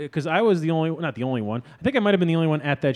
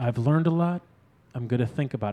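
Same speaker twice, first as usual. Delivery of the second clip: put-on whispery comedian voice, lower and quieter; 4 semitones lower, 5 dB quieter than usual. Mocking how a comedy special opens: imitating Aziz whisper-speaking. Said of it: "You don't fucking whisper speak".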